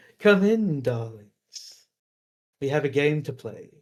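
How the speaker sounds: welcoming, inviting creature character voice. Voicing a sphinx who invites the players in: sphinx voice. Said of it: "emanate from the sphinx and say".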